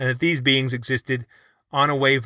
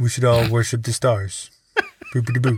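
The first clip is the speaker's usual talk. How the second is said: put-on pompous science-lecturer voice; 3 semitones lower than usual. Mocking a skeptic's views on ghosts: Neil deGrasse Tyson impression. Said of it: "It's a great impression".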